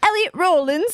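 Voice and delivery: put-on English accent. Retelling how they said a man's name, in a put-on english accent. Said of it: "saying Rollins in a in an English accent".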